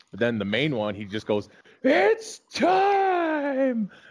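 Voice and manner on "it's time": put-on very high screamed announcer call, stretched out. Retelling how a fight announcer introduces the main event: screaming announcer call. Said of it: "he screams out".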